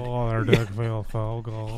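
mock sarcastic delivery. Acting out a line from sarcastic porn: mock sarcastic porn line. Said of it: "sarcastic porn".

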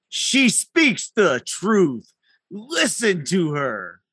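loud, fearless, resounding booming voice with swoops. Speaking as Peter, echoing what she said, in a booming voice. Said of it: "in a booming voice, not his afraid voice".

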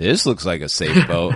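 dry, ironic, mocking, sarcastic tone. Demonstrating a study's example sentence said sarcastically: sarcastic tone. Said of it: "I don't know how you would say that sarcastically, like".

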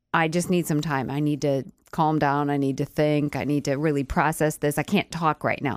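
ordinary delivery

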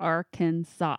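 Arkansas with stress on first and last syllables. Teaching a place name's pronunciation, arkansas stressed on first and last syllables. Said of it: "the accent on the first and last syllables, there's three syllables".

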